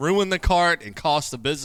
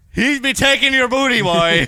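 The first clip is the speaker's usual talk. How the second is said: put-on pirate voice, higher and louder; 9 semitones higher, 8 dB louder than usual. Joining a joke about the other speaker being a pirate: pirate voice. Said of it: "Says the fucking pirate".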